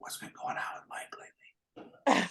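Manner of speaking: soft, hushed, gossiping whisper.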